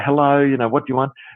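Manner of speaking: ordinary talk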